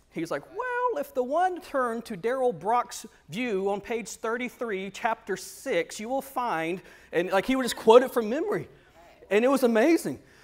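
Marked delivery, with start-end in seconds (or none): 0.5-6.9 high, slow, formal professor voice, odd delivery. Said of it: "he talked very weird".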